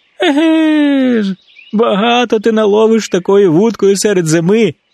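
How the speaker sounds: high scoffing laugh, "Еге" drawn out. Reading a fable, the hedgehog answers the squirrel; laughing. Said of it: "засміявся їжачок".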